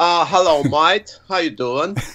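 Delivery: bad, fake put-on Australian accent. Asked to give it a shot, one speaker attempts the accent, bad Aussie accent. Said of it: "Can you do an Aussie accent better than us?".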